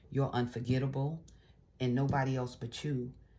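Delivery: ordinary talk, nothing marked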